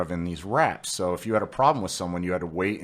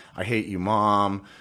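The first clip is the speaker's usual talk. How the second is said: ordinary talk, nothing marked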